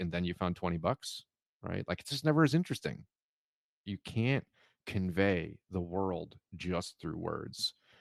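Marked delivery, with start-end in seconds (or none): none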